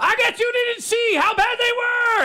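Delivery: mock very high-pitched screaming rant. Imagining a debate where the opponent screams back: imitating Stephen A. Smith screaming. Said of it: "he would scream at me again".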